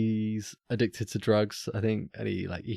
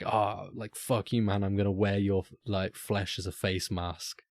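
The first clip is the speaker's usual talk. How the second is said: plain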